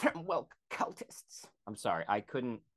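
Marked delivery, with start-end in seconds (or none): 0.0-1.5 teasing, mocking, effeminate-sounding voice. Repeating a man's words to make fun of how he sounded, in a mocking effeminate voice. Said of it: "making fun of how effeminate he sounded".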